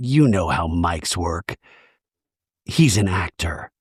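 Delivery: whispered aside. Retelling a cast member's aside to another person: imitating a whisper. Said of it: "turns to Jason and whispers".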